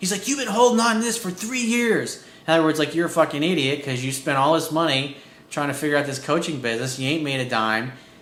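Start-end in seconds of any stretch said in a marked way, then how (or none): 0.3-2.2 acted-out, very high, pissed-off angry outburst. Recounting how a man blew up at him over his coaching business, retelling an angry outburst. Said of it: "he got all pissed off at me and blew up at me".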